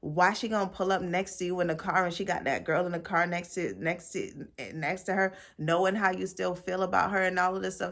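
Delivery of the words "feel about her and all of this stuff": normal talking voice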